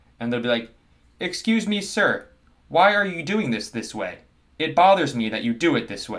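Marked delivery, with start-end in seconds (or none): 1.2-6.2 slow, stilted, overly proper word-by-word English, pitched up. Imitating English-speaking characters in Korean dramas: imitating slow, stilted textbook English. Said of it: "They say their words very slowly".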